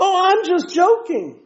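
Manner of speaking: very high, slow, sweet mock-innocent singsong.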